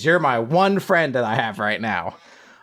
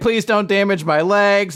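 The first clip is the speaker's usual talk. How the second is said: high, tearful, pleading, crying robot voice; 7 semitones higher, 3 dB louder than usual. Retelling a scene where a robot is threatened, mock crying. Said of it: "the robot's just crying like".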